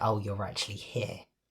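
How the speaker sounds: acted snooty, rude, condescending talking-down tone. Retelling what a nurse said on coming out: imitating a rude condescending tone. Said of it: "that rude, condescending tone".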